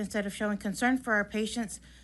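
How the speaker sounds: usual speaking voice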